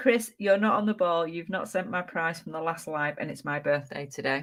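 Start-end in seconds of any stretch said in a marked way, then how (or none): none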